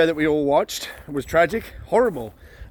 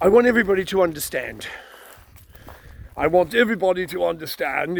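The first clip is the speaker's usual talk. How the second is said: fake upper-class English accent; 2 semitones higher than usual. Quoting the Prime Minister's statement: Boris Johnson's Eton accent. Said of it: "in his typical Eton accent".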